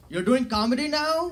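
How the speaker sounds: put-on Indian accent.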